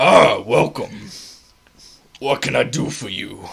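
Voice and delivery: very loud, booming, made-up big-man shopkeeper voice. Playing the big man behind the counter greeting customers, made-up voice for big man. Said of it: "I gotta think of a voice".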